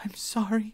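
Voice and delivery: very high, shaky, trembling voice. A newcomer answers someone who snapped and called her a liar; shaky voice. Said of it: "the newcomer said in a shaky voice".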